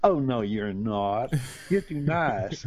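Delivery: beautiful, stretched, drawn-out southern drawl. Retelling what the first person they told they were atheist said, in a southern drawl. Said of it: "she said in this beautiful southern drawl".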